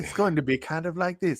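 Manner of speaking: snooty, put-on, upper-crust posh British accent. Retelling how the actress pitched her accent: imitating actress's British accent. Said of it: "And she's like".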